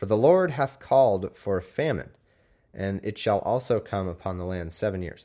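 ordinary talk, nothing marked

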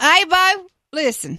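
folksy put-on country accent. Suggesting an accent bob should use: country accent. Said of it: "you should be country. Like".

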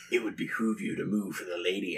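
low, quiet, hushed, steely tough-guy voice. Suggesting how a player pulls a gun and speaks, steely Clint Eastwood voice. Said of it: "in your best steely Clint Eastwood voice".

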